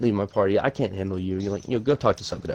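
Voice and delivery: plain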